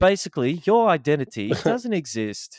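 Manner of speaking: put-on drifting Australian accent. Quoting a woman in a story, accent slipping into Australian. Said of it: "you're going Australian again".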